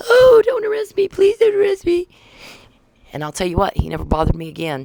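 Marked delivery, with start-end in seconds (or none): 0.0-2.1 put-on shrill, sobbing scream, very high. Retelling a kid's reaction to being confronted, imitating a kid crying, screaming. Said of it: "the kid starts crying, screaming".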